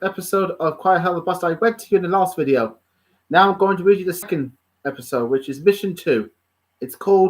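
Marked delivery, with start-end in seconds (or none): none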